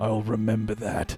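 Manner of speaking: grave, stern, dead-serious, severe delivery. Voicing a dwarf accepting a gift with a stern look: stern. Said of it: "a really fucking stern look in the eyes and goes".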